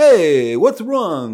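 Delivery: New Jersey guy accent. Showing how they did it, like a new jersey guy: new jersey accent. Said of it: "Like a New Jersey guy".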